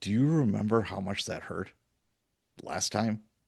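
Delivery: soft, hushed half-whisper, close up. Retelling facing the same man with a knife a year later, half-whispering to him. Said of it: "and I just whispered to him".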